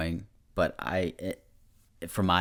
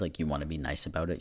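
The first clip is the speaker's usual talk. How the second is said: ordinary talk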